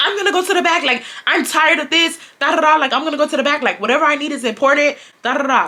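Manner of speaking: put-on heated, huffy, angry ranting outburst. Retelling a coworker storming off to the back: imitating someone angry. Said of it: "decided to get angry than a bitch".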